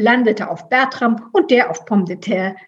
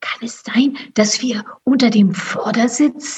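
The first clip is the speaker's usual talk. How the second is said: horrified stage whisper. Narrator reads a hidden character realizing where they are; horrified whisper. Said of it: "flüsterte Grier entsetzt".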